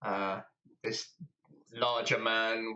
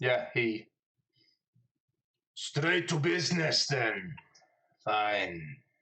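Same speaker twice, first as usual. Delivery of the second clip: put-on accent drifting into French. Voicing a character in a role-play game, accent drifting into French. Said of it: "It's gone French again".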